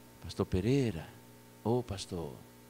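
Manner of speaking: quiet, low, soft calling voice.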